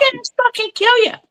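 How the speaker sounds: high-pitched shouting cartoon voice. Imitating a roommate's yelling, Roger Rabbit voice. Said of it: "he sounds like a fucking rabbit cartoon".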